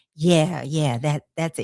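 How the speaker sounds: ordinary talk, nothing marked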